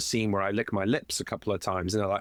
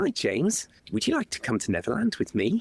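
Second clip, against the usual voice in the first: very high, sing-song, put-on friendly coaxing voice; 9 semitones higher than usual. Recalling a scene, the speaker shows how he enticed the kid James: put-on friendly voice. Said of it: "I'm talking like this to, to James".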